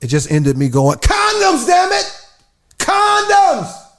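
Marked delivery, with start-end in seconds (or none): 1.0-3.7 very high-pitched, very slow, drawn-out holler. Retelling losing patience asking the clerk for condoms: imitating own past shouting. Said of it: "I shouldn't have been shouting like that".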